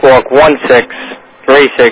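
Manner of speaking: unhurried, spaced-out reading.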